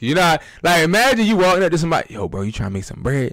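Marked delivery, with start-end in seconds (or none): 2.1-3.3 creepy voice, much lower, quieter. Speaker demonstrating walking up to someone with a money-making pitch, creepy voice. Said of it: "that's still creepy".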